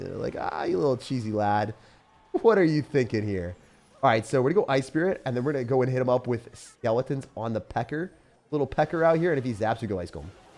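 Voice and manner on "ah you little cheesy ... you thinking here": mock taunting laugh, pitched lower. Imitating the opponent taunting over a play: imitating opponent laughing at me. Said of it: "kinda laughing at me".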